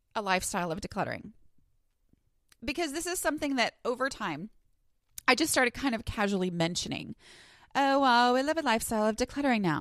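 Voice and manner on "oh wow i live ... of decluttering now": put-on valley girl voice. Repeating her own remark the way she hears it in her head, valley girl voice. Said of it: "why in my head do I talk like a valley girl?".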